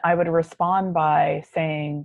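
ordinary talk, nothing marked

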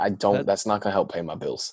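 ordinary delivery

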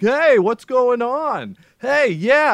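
high, slow, drawn-out mock yell.

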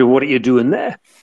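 put-on northern English accent. Recounting what a friend said on a phone call abroad, imitating his regional speech; northern english accent. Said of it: "in his Northern accent".

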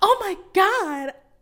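very high porn voice. Picturing suddenly noticing someone watching, reacting in a porn voice. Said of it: "That's my porn voice".

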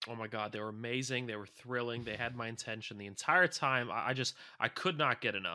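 ordinary talk, nothing marked

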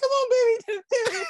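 loud, very high-pitched put-on voice. Imitating how a guy talks, imitating a much higher voice. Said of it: "he's got a much higher voice. He's like".

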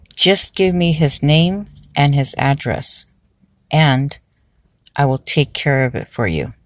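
ordinary talk

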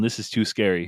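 ordinary talk

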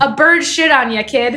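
said loudly. Retelling a father's remark at the Vatican: imitating dad saying it loudly. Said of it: "kind of loud".

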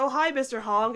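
plain

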